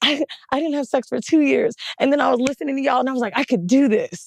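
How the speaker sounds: mock tearful sobbing girl voice. Recounting what a crying fan said on meeting her, imitating a crying girl. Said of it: "started freaking out and crying when she saw me".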